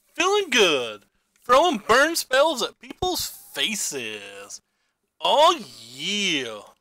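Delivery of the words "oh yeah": pitch swinging up and around. After winning a game round, the speaker does a Randy Savage impression. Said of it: "That was my Randy Savage".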